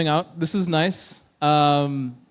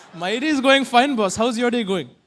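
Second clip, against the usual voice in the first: Bengaluru-accented English throughout, pitched up; 5 semitones higher than usual. Talking to an assistant after asking it for a Bengaluru accent. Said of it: "I wanna talk to you in a Bengaluru accent".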